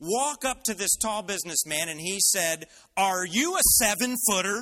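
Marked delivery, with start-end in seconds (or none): 3.0-4.6 acted brash, rude, in-your-face, loud obnoxious bellow. Speaker retelling a guy walking up to a tall businessman: imitating a loud, obnoxious voice. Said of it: "in a very loud, obnoxious voice".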